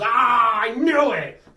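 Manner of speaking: loud, high shout with hysterical laughing cackle. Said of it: "he laughs hysterically and goes".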